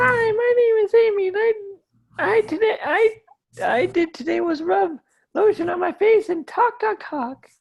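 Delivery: silly, squeaky, very high-pitched put-on voice. Asked to pretend to be Amy and talk about the date, ridiculous high-pitched Amy voice. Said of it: "puts on a ridiculous high pitched voice".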